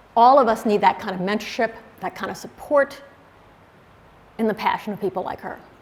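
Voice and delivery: voice catching, slightly choked up with emotion. Remembering a friend and mentor before a room of people, choking up a bit. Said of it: "I'm choking up a bit".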